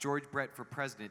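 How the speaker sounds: plain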